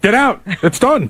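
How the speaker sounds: slow, mad, angry, done-with-it tone, acted out. Recounting how he threw everyone out of his house, imitating someone mad. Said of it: "He was mad in general".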